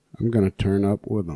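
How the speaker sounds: imitated emotionless flat voice. Retelling a woman asking Jalen about his teammates; imitating Jalen's monotone. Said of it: "Just the most monotone".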